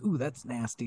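put-on muttering under breath. Quoting a remembered line from a show, imitating Keenan muttering under breath. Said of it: "kind of under his breath".

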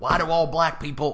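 fake American Southern accent. Acting out a question people supposedly ask, in a put-on Southern voice. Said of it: "I'm doing the Southern voice again".

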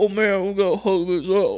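very deep, dim-witted, dopey put-on dude voice. Showing how a voice for a big man would sound: put-on deep dumb-sounding voice. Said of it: "I was just gonna go like".

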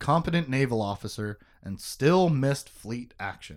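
normal talking voice

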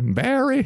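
high Southern belle voice. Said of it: "like this Southern Belle voice".

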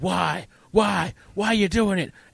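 put-on, high-pitched commentator screaming. Describing a wrestling match, speaker acts out the commentator, retelling a scream. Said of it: "is just screaming".

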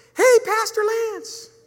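tiny piping voice, very high and very loud. Retelling how someone called out to Pastor Lance in a bathroom line, little voice. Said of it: "I hear this little voice go".

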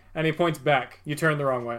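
ordinary talk, nothing marked

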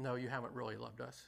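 mock sarcastic tone. Acting out Israel's reply to the Lord: imitating a sarcastic reply. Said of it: "sarcastic, you know, feeling of".

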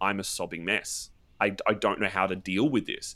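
usual speaking voice

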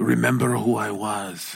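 playful put-on whisper. Joking about being sixty, whispering to a partner: mock whisper. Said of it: "I'm gonna have to whisper things like".

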